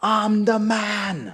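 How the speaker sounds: put-on shrill, very high scream, drawn out. Telling about a woman, the speaker retells her slogan: retelling her scream. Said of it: "she would scream".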